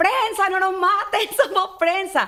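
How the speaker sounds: drawn-out, high, slow desperate yell. Retelling being shot at, waving a jacket: retelling a shout. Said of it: "empiezo a gritar".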